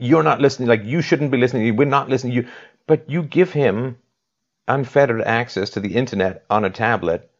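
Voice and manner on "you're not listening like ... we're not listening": angry, mad scolding tone. Repeating back the other speaker's words to their child: imitating someone sounding mad. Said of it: "you sounded mad".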